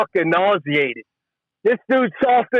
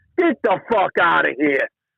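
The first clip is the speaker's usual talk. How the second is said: plain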